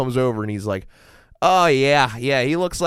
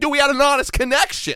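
mock hurt, very high, squeaky wounded plea; 13 semitones higher than usual. Retelling how a cop reacted to a hidden gun: imitating a betrayed cop. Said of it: "he felt betrayed".

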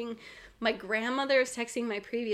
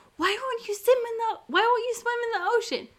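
mock very high, shrill, loud yelling; 12 semitones higher, 6 dB louder than usual. Retelling what a woman next door said to him: imitating someone yelling. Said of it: "yelling at him".

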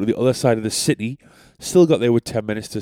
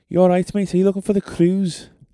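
Liverpool accent slid into on mate; 9 semitones higher than usual. Retelling meeting a man also looking for the cruise, in a put-on Liverpudlian accent. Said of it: "I can only slide into the Liverpudlian accent if I say mate".

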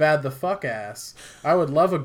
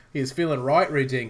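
terrible, bad, put-on Australian accent. Quoting a man while making fun of Australians: bad Australian accent. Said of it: "do a shit Australian accent".

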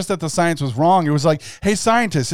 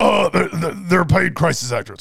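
coarse, croaky, rough and creaky caricature voice. Mocking a pundit's claim with an Alex Jones impression. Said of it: "make a jab at Alex Jones here and just be like".

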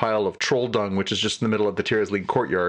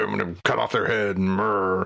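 put-on dull-witted, dim troll voice. Retelling a troll character's line from a show, dull-witted troll voice. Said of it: "a little more dull-witted, like you'd expect a troll to be like".

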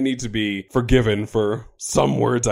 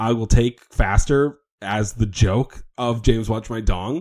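ordinary talk, nothing marked

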